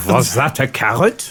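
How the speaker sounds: put-on French accent. Voicing a character, another speaker says it sounds French: French accent. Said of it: "that's French".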